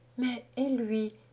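anxious, slightly high murmur with a little anguish. Hearing a moaning call from the rock at nightfall, she speaks, murmuring, a little anguished. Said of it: "murmura Jeanne avec un peu d'angoisse".

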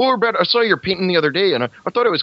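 put-on Canadian-accented voice. Imitating a high school art teacher greeting a student in the morning, Canadian teacher's voice. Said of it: "she talked a lot like this".

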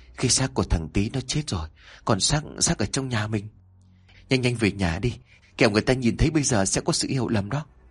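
plain reading voice

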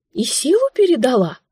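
breathy, high-pitched voice. A character in a story asks the narrator a question, asking breathlessly. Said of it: "с придыханием спрашивает".

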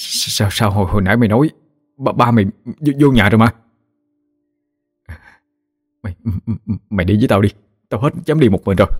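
shaky, trembling, quavering voice. In the story, the narrator asks his companion a question in a trembling voice. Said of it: "hỏi nó với giọng run rẩy".

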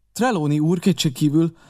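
ordinary talk

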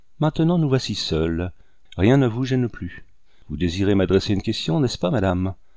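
ordinary talk

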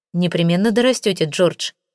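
ordinary delivery

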